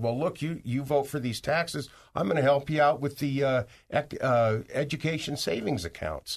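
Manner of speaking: normal talking voice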